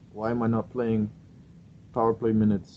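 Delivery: a bad, laid-on fake Russian accent. Imagining what Gino would say in the locker room, terrible Russian accent. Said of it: "terrible Russian accent".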